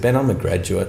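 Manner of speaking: ordinary talk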